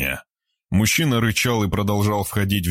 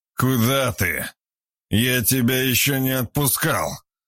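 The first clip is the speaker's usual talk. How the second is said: put-on very drunk-sounding, pitched-up voice; 5 semitones higher than usual. Narrating a man stopping a young woman from leaving his study, in a very drunk voice. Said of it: "совсем пьяным голосом".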